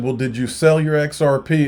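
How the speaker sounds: sarcastic, kidding tone. Retelling an interview question once asked: retelling a sarcastic question. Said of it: "I was being sarcastic".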